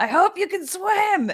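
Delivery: very high-pitched, booming shouting voice. Playing Lima, the speaker shouts at nobody with thaumaturgy, in a booming voice. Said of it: "booming voice saying".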